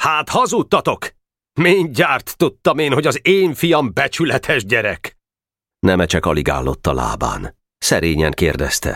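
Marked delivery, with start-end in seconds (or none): 0.0-5.2 high-pitched, scornful, sneering, mocking tone. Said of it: "Mondta gúnyosan".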